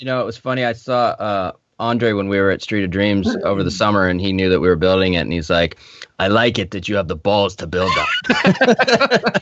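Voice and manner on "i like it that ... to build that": put-on faint Russian accent, laid on lightly, drawn out. Quoting Andre from a summer encounter, with a slight Russian accent. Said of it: "I said it in a slightly more Russian accent".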